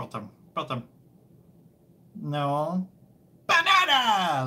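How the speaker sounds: cartoon-creature voice with wildly swinging pitch. Streamer wonders aloud whether they have a Minion voice, then tries it: Minion voice. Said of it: "Do I have a Minion voice?".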